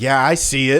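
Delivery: sassy, snotty, full of attitude. Retelling a friend's reply to an angry neighbor: imitating a friend giving attitude. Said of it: "giving him attitude".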